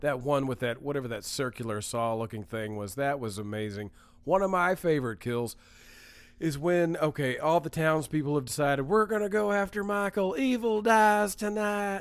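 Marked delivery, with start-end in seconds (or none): 8.8-12.0 pitched-up put-on southern accent. Retelling the townspeople's rally cry against the killer, in a put-on southern voice. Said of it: "I don't know why I'm doing a southern voice".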